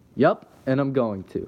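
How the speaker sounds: self-assured. Answering a friend's teasing challenge while climbing a tree, confident. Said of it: "I answered with confidence".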